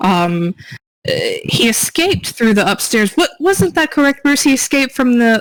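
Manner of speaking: high-pitched lady of the manor voice.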